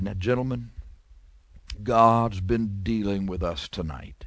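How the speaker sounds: level, very flat, one-note monotone drone. Speaker recalls an old superintendent addressing the men at the mission; very monotone voice. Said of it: "with a very monotone voice".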